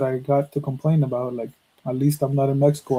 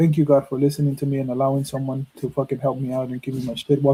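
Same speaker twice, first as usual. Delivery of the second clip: put-on sobbing, quicker pace. Retelling what a man said after being helped, imitating a sobbing prayer. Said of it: "he's sobbing".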